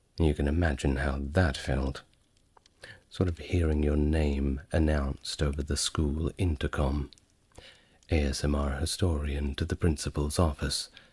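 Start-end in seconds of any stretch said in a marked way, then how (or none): none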